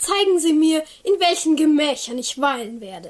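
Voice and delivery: mock pompous nobleman voice with grand airs. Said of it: "Du kannst ihn gut nachmachen".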